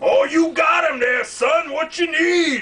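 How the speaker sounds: exaggerated, very high, over-the-top hammy put-on voice. Answering a telemarketer's call and playing along with him: over-the-top put-on voice. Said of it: "I'm just over the top doing this".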